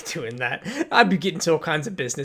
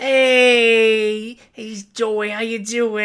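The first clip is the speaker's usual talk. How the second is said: slow tough-guy voice with hey stretched out; 7 semitones higher, 7 dB louder than usual. Voicing Steven greeting a customer as he closes up: Steven character voice. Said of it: "this is the tough voice".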